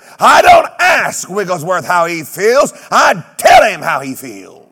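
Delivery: very loud, forceful voice. Retelling a man's answer when asked how he was doing, retelling a raised voice. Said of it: "Brother Wigglesworth raised his voice and said".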